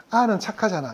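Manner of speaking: ordinary talk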